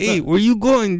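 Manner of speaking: high-pitched put-on Mexican accent. Voicing a coyote asking someone where they are going: put-on Mexican accent. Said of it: "that goes my Mexican".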